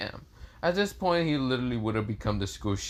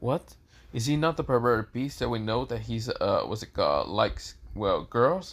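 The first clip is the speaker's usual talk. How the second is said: ordinary delivery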